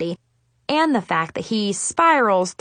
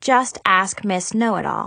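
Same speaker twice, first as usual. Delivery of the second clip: ordinary delivery, nothing marked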